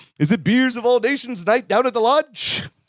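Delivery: exaggerated, hammed-up comic voice, pitched high. Retelling how Balky plays Norton: Balky doing Norton. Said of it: "He does it so good".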